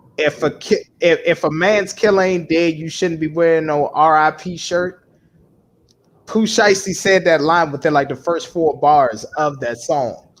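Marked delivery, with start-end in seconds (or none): none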